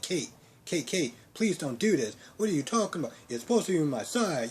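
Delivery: mock yelling and screaming. Retelling a character's plea to Kate after being fired: imitating someone yelling and screaming. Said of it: "He's yelling, he's screaming".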